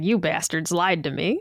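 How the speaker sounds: imitated elderly man voice. Talking about a hyped game, doing a Pawn Stars Old Man impression. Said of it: "instead of feeling like the old man on Pawn Stars, he's like".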